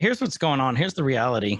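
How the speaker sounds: ordinary talk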